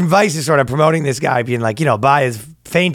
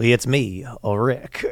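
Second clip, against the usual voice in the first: soft, hushed, held-back put-on actor's voice; 3 semitones lower, 6 dB quieter than usual. Speaker imagines Kevin Spacey voicing Rick, doing a Kevin Spacey impression. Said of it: "How does Kevin Spacey talk?".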